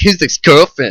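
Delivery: mock condescending tone. Imitating another speaker's question about a girlfriend: imitating a condescending tone. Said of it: "she said it all condescending".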